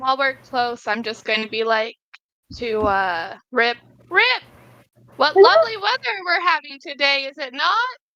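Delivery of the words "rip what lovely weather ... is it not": very loud, high-pitched, carrying. Chatting to Rip while close by: very loud voice. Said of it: "In a very loud voice".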